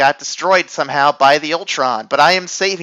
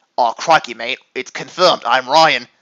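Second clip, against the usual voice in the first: put-on Australian accent; 3 semitones lower than usual. Introducing himself on a podcast in a put-on Australian accent. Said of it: "this accent".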